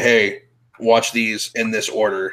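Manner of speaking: ordinary talk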